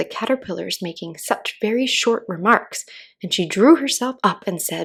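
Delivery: ordinary delivery, nothing marked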